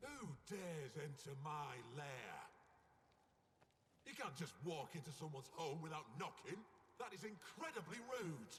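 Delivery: put-on angry English accent. Voicing a talking turtle scolding intruders in its cave: angry English accent. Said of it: "Francois has an English accent".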